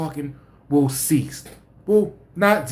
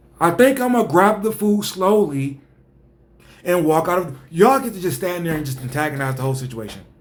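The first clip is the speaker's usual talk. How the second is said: ordinary talk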